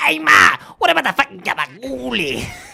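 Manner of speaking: very high, very loud, shrill, raspy gremlin screech. Retelling a guy in the background asking about gabagool: gremlin-like voice. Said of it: "It's just like a gremlin".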